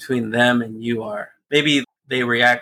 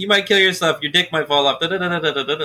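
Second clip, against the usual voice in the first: rapid-fire, rattled-off, pitched-up commercial-style delivery; 5 semitones higher than usual. Mocking drug commercials that ramble off side effects, imitating rapid-fire disclaimer. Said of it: "ramble off the side effects real fast".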